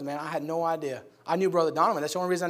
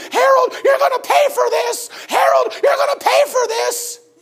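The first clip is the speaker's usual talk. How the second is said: angry, high, shrill screaming; 10 dB louder than usual. Retelling how the ladies in the tabernacle reacted: imitating ladies screaming. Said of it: "and they're screaming".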